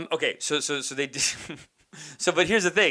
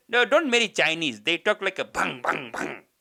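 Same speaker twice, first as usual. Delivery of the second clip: disapproving family auntie voice; 2 semitones higher than usual. Retelling what an auntie said at a party: imitating an auntie. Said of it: "she goes".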